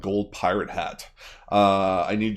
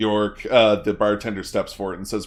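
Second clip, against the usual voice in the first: normal talking voice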